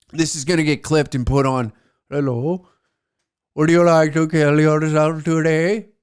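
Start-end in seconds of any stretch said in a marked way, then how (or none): 2.1-5.8 put-on Indian accent. Speaker acting out a phone call to a call center, Indian call center accent. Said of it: "I don't really want to do the accent".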